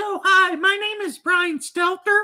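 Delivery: very high, feminine-sounding voice. Retelling how Mark Dice mocks Brian Stelter: imitating Brian Stelter. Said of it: "anytime he's copying Brian Stelter".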